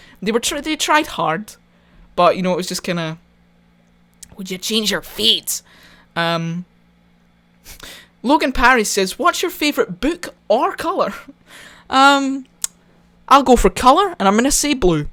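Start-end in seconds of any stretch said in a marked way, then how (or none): 4.4-5.6 put-on Scottish accent drifting toward American. Quoting a line whose Scottish accent the speaker says was Americanized: Americanized Scottish accent. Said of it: "they Americanized the Scottish accent so much".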